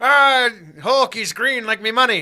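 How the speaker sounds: very loud, high-pitched, belted cartoon voice. Joking about an actor's voice in a trailer: Mister Krabs voice. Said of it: "Mister Krabs".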